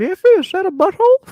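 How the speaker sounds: high, loud put-on grandma voice.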